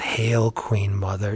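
mock condescending sarcasm. Retelling a comic panel where the possessed kid addresses his mother: mock-sarcastic, condescending. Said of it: "So sarcastic and condescending".

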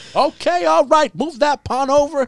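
very high, booming, drawn-out put-on voice. Coaching a chess player through a training game: Denzel Washington voice. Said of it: "So you're playing with Denzel Washington".

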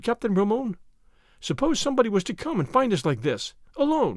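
ordinary delivery

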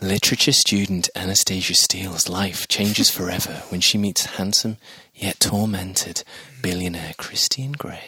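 low, sultry, seductive put-on sexy voice. Reading a story summary aloud for the group, in a put-on sexy voice. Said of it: "I'm going to do a sexy voice".

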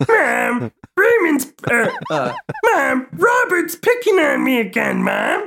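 very high, pitched-way-up cartoon puppet bear voice. Whining to mother about a brother picking on him: Ray as Fozzie Bear voice. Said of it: "if Ray was played by Fozzie Bear".

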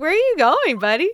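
high, loud mock exasperated calling voice.

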